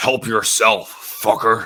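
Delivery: high, scratchy put-on voice. Using a scratchy voice to do a Freddy impression: scratchy Freddy voice. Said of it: "with my scratchy voice, I can do a pretty good Freddy impression".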